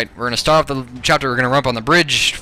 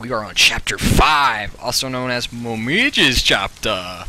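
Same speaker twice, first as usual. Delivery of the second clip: slow, eerie, unsettling put-on voice. A gameplay commentator announces the chapter in a creepy voice. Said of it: "Apologize for that creepy voice".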